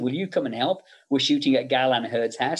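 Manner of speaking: ordinary talk, nothing marked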